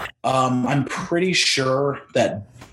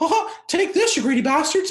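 very high, little cartoon mouse voice; 13 semitones higher than usual. Acting out Disney handing Sony a big check: Mickey Mouse voice. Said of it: "Was that your Mickey Mouse?".

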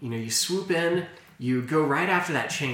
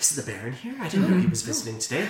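hushed whisper under breath, higher and faster; 7 semitones higher than usual. The game master voices the maids whispering about the Baron's visit, in a hushed whisper. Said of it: "You hear some hushed whispers like".

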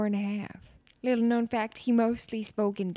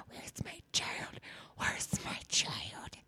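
frantic, breathy whisper. Retelling Mark Ruffalo calling 911 about his child: imitating a frantic Mark Ruffalo. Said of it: "He's calling to nine one one and he's frantic".

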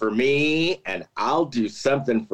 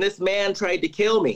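mock yelling, higher; 5 semitones higher than usual. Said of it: "she starts yelling".

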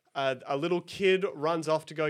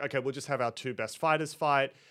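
usual speaking voice

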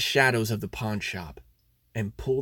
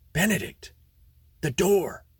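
half-whispered, pitched up; 6 semitones higher than usual. Having slipped out of the car, the narrator alerts Benedict; half whispered. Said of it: "I half whispered".

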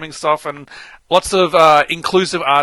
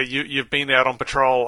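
ordinary delivery

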